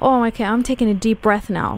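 normal talking voice

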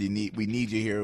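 normal talking voice

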